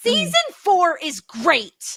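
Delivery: shout, pitched very high and swooping. Announcing an opinion to a co-host about the season: shouting. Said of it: "but I'm gonna shout it".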